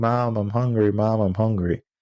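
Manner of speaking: put-on tearful little child's crying, pleading voice. Retelling a story of a hungry family, voicing the children: imitating crying children. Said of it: "the kids were crying".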